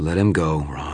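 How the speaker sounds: slow, disgusted tone with hurt showing through. A woman speaks to a man standing in another man's way, disgusted, hurt underneath. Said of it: "Her tone of voice was disgusted".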